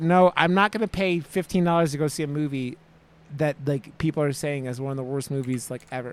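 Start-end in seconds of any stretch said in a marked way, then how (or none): none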